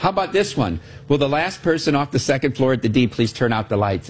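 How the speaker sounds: usual speaking voice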